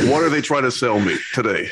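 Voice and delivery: ordinary talk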